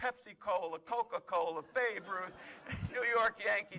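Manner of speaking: mock screaming. Telling a war story, acting out a man shouting at a charging soldier, retelling a scream. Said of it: "he started screaming".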